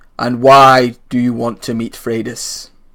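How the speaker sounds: deep booming voice. Voicing an unseen guard in the mist: deep booming voice. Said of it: "a second similar voice says".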